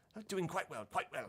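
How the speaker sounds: high dog character voice. Voicing a pug who runs out to greet the party late at night: voicing Tomas the pug. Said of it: "Tomas the pug".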